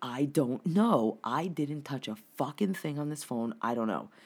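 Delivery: ordinary delivery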